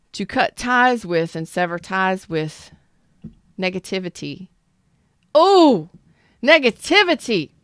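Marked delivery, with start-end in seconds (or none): 5.4-7.5 high-pitched, loud outburst. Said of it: "that was loud, y'all".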